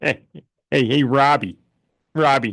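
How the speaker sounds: cartoonish father voice. Show your co-host the impression you both like doing on the show: Peter Griffin impression. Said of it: "do love a good Peter Griffin impression".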